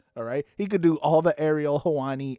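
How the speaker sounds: ordinary talk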